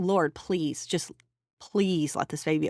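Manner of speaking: put-on begging, pleading voice. Retelling a prayer while being brought into the NICU room: retelling own begging.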